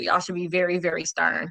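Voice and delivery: normal talking voice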